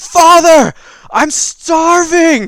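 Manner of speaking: put-on young man crying out, very high and loud. Storyteller voicing someone beneath the chapel floor, young man crying out. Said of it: "you hear a young man's voice cry out".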